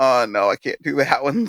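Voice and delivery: mock slow, drawn-out fake crying voice. Picturing own reaction to a nail through the hand: mock crying.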